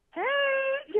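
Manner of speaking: put-on fake friendliness. Retelling how a lady she doesn't know greeted her in a store, mock fake-friendly greeting. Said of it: "I'm all fake".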